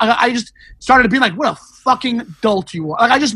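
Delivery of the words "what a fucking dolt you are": put-on angry, cutting, jabbing tone. Recounting how they started insulting him on the show, retelling an angry insult. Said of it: "I got so mad".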